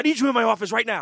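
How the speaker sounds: put-on frantic, panicked, very loud delivery. Retelling someone rushing into the office: imitating Tom Chiusano in a panic. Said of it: "comes into the office in a panic and goes".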